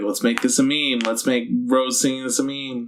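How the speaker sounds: ordinary talk, nothing marked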